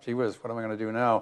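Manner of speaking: ordinary delivery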